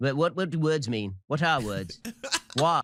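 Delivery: New Zealand accent drifting into a British accent. A podcast host does accents in a New Zealand edition segment, Kiwi accent slipping into British. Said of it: "then he it just went straight to British".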